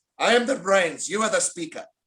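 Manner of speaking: put-on thick Spanish accent. Speaker quotes what his wife says about the family; imitating a thick spanish accent. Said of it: "in her thick Spanish accent".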